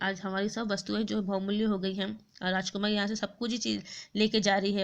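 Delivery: ordinary delivery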